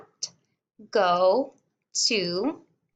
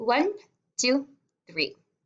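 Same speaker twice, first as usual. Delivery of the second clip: plain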